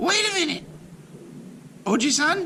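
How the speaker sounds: tiny voice shouting, pitched very high. Narrator reads a tiny voice stopping the old man's knife, shouting. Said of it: "a tiny voice shouted".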